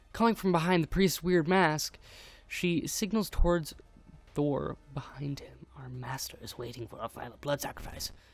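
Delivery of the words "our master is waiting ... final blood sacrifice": soft, raspy, rasping voice. Voicing the players' aunt speaking from behind a priest's mask, raspy voice. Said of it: "You hear a raspy voice".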